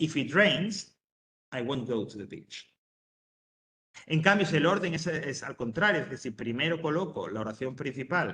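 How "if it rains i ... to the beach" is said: brief pause after the word rains. Reading an english example sentence aloud, with a pause after rains. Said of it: "a la hora de leerlo también se produce esa pausa".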